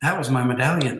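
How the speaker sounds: put-on frightened, startled sudden realization. Speaker retells someone on the street at night: imitating a scared voice. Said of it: "they have this scared um, voice about it".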